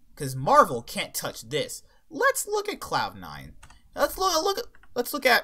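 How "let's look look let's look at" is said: very high voice that cracks. Presenting an esports team's sponsors to viewers, voice crack. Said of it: "us having a voice crack there".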